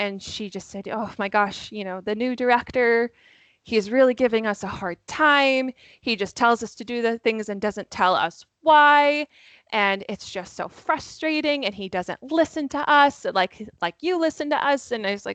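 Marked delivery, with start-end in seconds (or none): 0.9-14.9 mock pressing, earnest, urgent pleading voice. Retelling what a child from camp said: imitating an urgent voice. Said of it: "She had this urgency in her voice".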